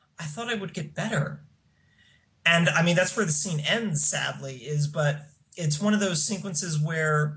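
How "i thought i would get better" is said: soft, pathetic, pitiful little voice. Recapping a scene where a character answers her question: imitating Will's pitiful voice. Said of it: "in the most pitiful sounding voice".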